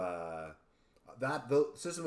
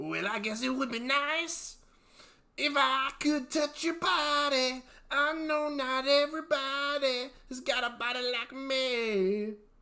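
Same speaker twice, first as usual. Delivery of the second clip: very high, very slow, loud rasp, dragging out me; 5 dB louder than usual. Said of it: "let's hear your [name]".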